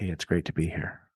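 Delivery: breathy, whispery, hushed public-radio delivery. A guest greets the podcast hosts as he is brought in, in an NPR voice. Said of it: "you're doing your NPR voice?".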